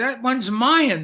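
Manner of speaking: mock four-year-old's demanding scream, very loud. Recalling being four while presents were opened, retelling a child's scream. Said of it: "I scream".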